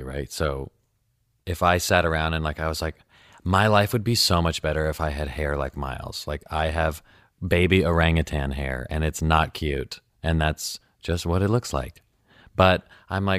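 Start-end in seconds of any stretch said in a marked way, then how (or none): none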